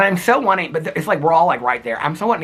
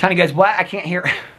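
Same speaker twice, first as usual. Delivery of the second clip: normal talking voice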